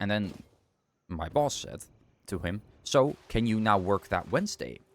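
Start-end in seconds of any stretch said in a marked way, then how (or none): 2.8-4.7 very condescending, mock patronizing, superior, talking-down tone. Retelling the boss's question to him, mimicking a condescending tone. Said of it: "In a very condescending tone".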